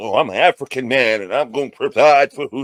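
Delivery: acted-out proud, boastful, puffed-up delivery. Retelling how a man said he would provide, imitating someone saying it with pride. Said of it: "he said it with pride".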